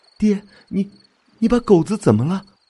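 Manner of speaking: quavering, trembling, high-pitched voice full of foreboding. Narrator reads Qinghe's words to the father dragging Qinghe home, trembling voice. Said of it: "清河的声音在颤抖".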